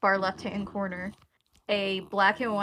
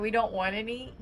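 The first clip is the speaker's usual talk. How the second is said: usual speaking voice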